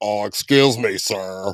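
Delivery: put-on very slow, drawn-out old English professor voice. Describing how a friend mimics him, the speaker does an old English professor voice. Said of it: "some kind of old English professor".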